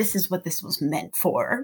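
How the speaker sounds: put-on self-satisfied voice. Retelling a friend setting up a chair in Central Park: imitating smug satisfaction. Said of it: "you were so satisfied with yourself".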